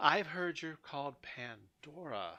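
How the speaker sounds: deep female voice. Retelling how a woman greets you as you approach, deeper feminine voice. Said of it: "a feminine but deeper voice than you would thought would come from her".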